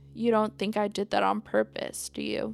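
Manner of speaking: usual speaking voice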